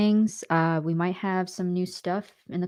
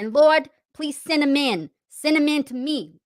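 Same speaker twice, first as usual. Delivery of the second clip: higher-pitched country accent; 8 semitones higher, 3 dB louder than usual. Speaking to the chat as the character Tammy, in a country voice. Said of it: "do the good country voice".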